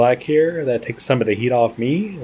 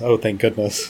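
mock muttering under the breath. Speaker retells a woman's reaction as others take over, mock-muttering under her breath. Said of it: "maybe kind of under her breath".

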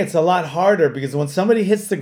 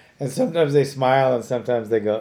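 ordinary talk

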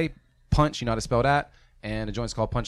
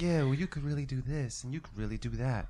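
gentle, kind, supportive, encouraging voice; 7 dB quieter than usual. Imitating a fellow reviewer's gentle feedback: imitating Abstract Mind's kind voice. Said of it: "your voice sounds so kind".

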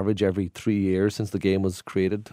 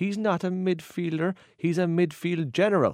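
put-on Cork accent, pitched very high; 10 semitones higher than usual. Retelling what a Cork man once said about a soccer player, Cork accent. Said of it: "I think I do a Cork accent".

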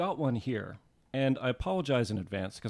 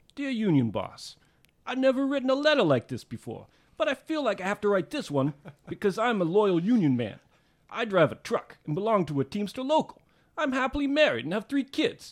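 loud, swooping cartoon-style New York accent; 9 semitones higher, 5 dB louder than usual. Reading a letter from a dockside pamphlet aloud, in a cartoon New Yorker voice. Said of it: "cartoon version of a New Yorker".

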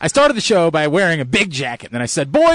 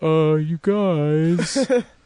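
put-on sheepish voice. Retelling how Aaron told the group about a problem: imitating Aaron sheepishly. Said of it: "Aaron looks at us sheepishly and says".

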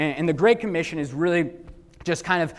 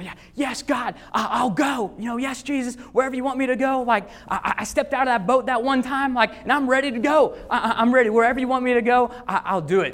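mock eager, high, ready-to-go screaming; 8 semitones higher than usual. Acting out the disciples watching Jesus ascend: Peter screaming. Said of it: "they're just screaming".

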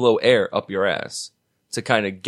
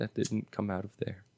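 put-on prim, dainty and very hushed; 14 dB quieter than usual. Retelling how she answered when asked if she farted, dainty delivery. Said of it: "she says it so daintily".

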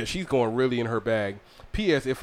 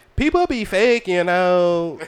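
put-on Mexican accent, California style; 6 semitones higher, 6 dB louder than usual. Reading someone's words aloud, trying to do Z's voice. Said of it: "I was trying to read it in her voice".

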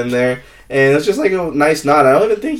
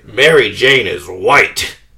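very slow, low drawl with every word drawn out; 5 semitones lower than usual. Performing a Stan Lee impression when asked to do it again: Stan Lee impression. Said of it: "Do it again right now".

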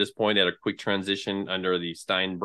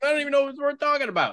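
very high, quick mock inner voice. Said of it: "I was like".

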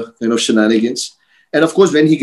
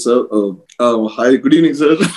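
mock stuttering and stammering, slower. Speaker retells calling a man back, imitating own stuttering and stammering. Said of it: "stuttering and stammering".

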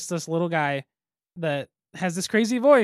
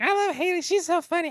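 very high, silly put-on voice; 12 semitones higher than usual. Host mimics what listeners of the show say, in a put-on imitation voice. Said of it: "You want to do that voice again?".

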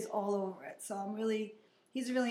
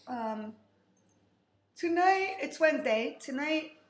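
high, raised words stretched out by a yawn; 5 semitones higher, 7 dB louder than usual. The speaker is exhausted and needs sleep, talking through a yawn. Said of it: "I'm sorry, I'm yawning".

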